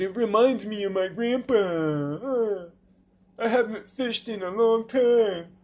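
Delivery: put-on whiny babyish voice, drawn-out uh. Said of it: "Little baby bullshit".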